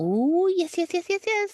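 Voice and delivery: very high pet-talk voice, as if to cats. Describing the voice Ryan uses with his cats, in Ryan's higher voice. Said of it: "and it's a higher voice".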